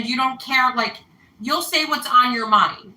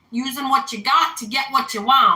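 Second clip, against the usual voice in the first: attempted, put-on American Southern accent. Describing a type of person, speaker makes an attempted Southern accent. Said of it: "That was my my attempt at a Southern accent".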